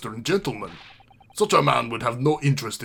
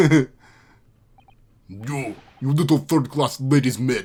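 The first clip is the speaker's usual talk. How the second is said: put-on low voice with Russian accent; 5 dB louder than usual. Voicing the sailor answering a polite request, low russian accent. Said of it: "hard to do Russian and also a low voice".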